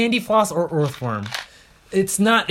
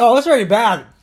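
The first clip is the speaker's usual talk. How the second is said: high, loud voice right on the edge of tears; 7 semitones higher, 7 dB louder than usual. Reacting to a rotten egg flavored candy, almost crying. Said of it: "you're almost crying".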